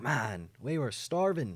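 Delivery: put-on Irish-sounding accent. Speaker acts out what a group said, in an Irish-sounding accent. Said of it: "That was Irish".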